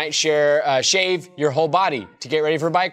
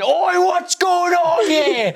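put-on very high, slow, angry, cross British accent; 4 dB louder than usual. Speaker acts out Chris rushing in, mock-angry British Chris impression. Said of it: "angry British Chris's accent".

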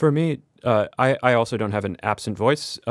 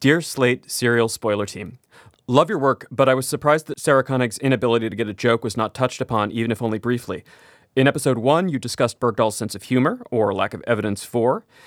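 plain

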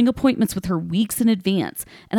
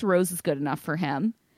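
ordinary talk, nothing marked

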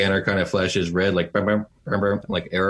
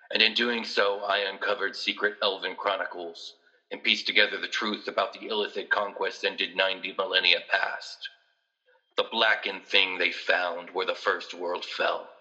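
character voice over an intercom, quieter; 7 dB quieter than usual. Voicing Doctor Zahn speaking over the intercom to the players: Doctor Zahn voice. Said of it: "it's Doctor Zahn's voice".

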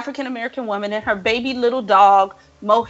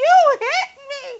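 screamed at a very high pitch. Retelling a fight on camera, quoting the hit woman screaming. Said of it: "she's screaming".

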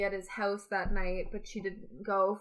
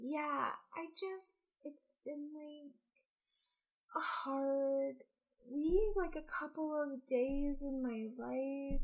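put-on soft, very slow, mopey sad voice; 6 semitones higher, 5 dB quieter than usual. Imitating someone answering a question in an interview: imitating a put-on sad voice. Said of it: "then she gets asked".

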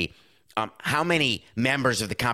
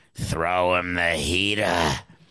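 put-on gruff baseball manager voice; 5 semitones lower than usual. Describing a manager's mound visit, speaker acts it out in gruff Lou voice. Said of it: "You're gruffy and you've got a mustache".

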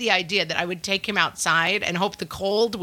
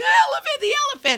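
put-on very high, wailing, screaming little-kid cry. Retelling what a crying child kept yelling: imitating a child screaming. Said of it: "he was just screaming".

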